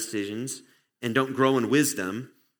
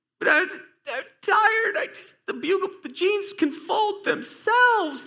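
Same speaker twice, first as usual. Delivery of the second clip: put-on very high, drawn-out, whiny little-kid voice; 3 dB louder than usual. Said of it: "I sound like a toddler".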